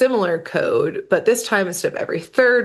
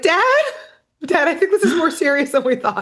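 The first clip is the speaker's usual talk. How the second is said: high-pitched, put-on scared, panicked, urgent pleading; 9 semitones higher than usual. Acting out a character calling his dad in a crisis: imitating a panicked call. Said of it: "being like".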